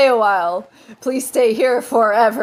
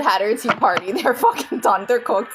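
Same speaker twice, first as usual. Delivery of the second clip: plain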